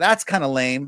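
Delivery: ordinary delivery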